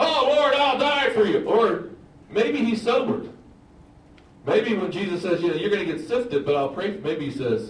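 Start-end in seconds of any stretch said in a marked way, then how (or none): 0.0-1.4 bold, ringing, loud and very high. Preaching on a Bible verse, acting out a reply to Jesus, loud. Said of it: "do you think he says it loud?".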